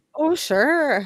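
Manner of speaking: brief, momentary Canadian-sounding accent. Reacting to a friend's joke about transcripts: canadian accent. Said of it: "Why were you Canadian for a second there?".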